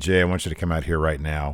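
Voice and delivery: low, quiet put-on talking. Retelling a wrestling promo, imitating Roman Reigns talking low. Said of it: "I'm trying to talk as low as I can".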